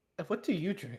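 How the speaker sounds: deeply curious tone. Voicing the barkeep, asking the customer who took a seat, with a very curious voice. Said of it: "Asked with very, very curious voice".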